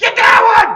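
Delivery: very high, very loud, excited screamed shout. Recalling how they both screamed at a cat, retelling a scream. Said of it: "We were both screaming at it".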